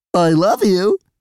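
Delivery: strange, weird, very high stuffed-toy squeak. Reading a story where a squeezed toy squeaks, in a weird high voice. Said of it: "in a weird high voice".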